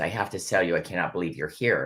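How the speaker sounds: ordinary talk, nothing marked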